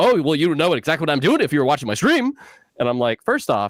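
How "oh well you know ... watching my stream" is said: super sassy, pitched-up delivery. Retelling what a buddy said in a chat, imitating a sassy friend. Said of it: "and he got super sassy".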